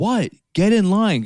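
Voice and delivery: mock stressed, very high, shrill, drawn-out yell. Retelling being told to get in the boarding line: imitating Katie yelling. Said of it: "Katie's, like, yelling at me".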